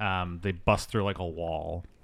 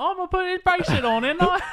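put-on very high, loud, annoying child voice; 5 dB louder than usual. Mocking a movie kid who is stumbling around: imitating Alex O'Connell. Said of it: "He plays Alex O'Connell".

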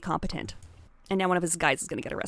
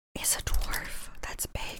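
whispered, much quieter. Repeating a clue while typing it, whispering. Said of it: "Why are you whispering?".

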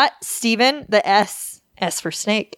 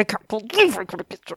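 mock disgruntled, grumbling mumble; 3 dB quieter than usual. Acting out the suspect's reaction to the police search: imitating disgruntled mumbling. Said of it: "The disgruntled, like, mumbling to himself".

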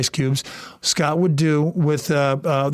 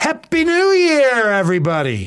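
livelier, more energetic, higher-pitched, less laid back; 8 semitones higher, 4 dB louder than usual. Showing another speaker a better way to wish a happy new year: livelier. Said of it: "Let's do it this way".

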